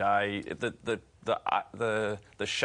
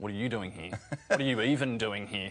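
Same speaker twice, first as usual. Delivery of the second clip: mock scornful, dismissive, contemptuous sneering tone. Telling how they first met, the speaker imitates a girl sneering at them. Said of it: "she turned to me and sneered".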